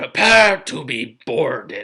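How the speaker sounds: loud booming voice, sounding amplified all around. Running a tabletop game, voicing a voice from the ship: booming, magically amplified. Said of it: "It's magically amplified".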